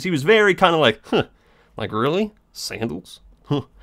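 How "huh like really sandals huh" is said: mock, derisive, sarcastic scoffing huff. Retelling what a man said on seeing the speaker's sandals, imitating a sarcastic scoff. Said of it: "what he was scoffing about".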